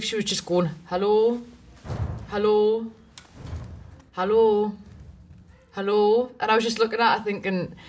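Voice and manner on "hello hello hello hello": put-on downtrodden Geordie accent, spoken very slowly. Speaker retells a woman waving and greeting; imitating a downtrodden geordie hello. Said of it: "Geordies have the most downtrodden hello".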